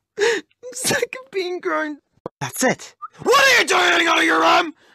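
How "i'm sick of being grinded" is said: soft speech, weeping through the words. Scolded for never coming out, the character answers crying.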